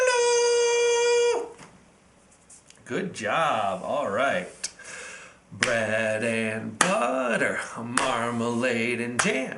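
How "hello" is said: squeaky, very high, drawn-out hello. Leading a group hello game, say hello as high as you can. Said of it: "Let's say hello as high as we can".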